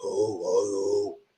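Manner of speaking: very deep, scratchy-throat voice. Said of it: "I sound like mad deep".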